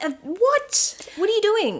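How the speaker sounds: "what" pitched way up in baffled disbelief.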